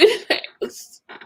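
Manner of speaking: crying, in tears. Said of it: "I'm just emotional".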